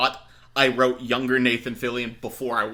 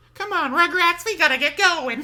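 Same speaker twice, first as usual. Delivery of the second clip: voice going right up into very high falsetto; 4 dB louder than usual. Doing the one voice they have for Tara Strong: Tara Strong voice, falsetto. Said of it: "I have one voice for Tara Strong, and it's this. It's just falsetto".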